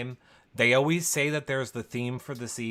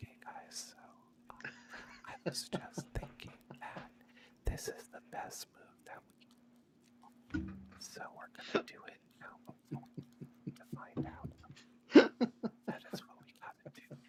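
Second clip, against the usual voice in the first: stealthy, secretive, hushed whisper; 8 semitones higher, 13 dB quieter than usual. Doing an impression of Kylan on the feeds, impression of Kylan stealth whispering. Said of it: "here's my impression of Kylan on the feeds".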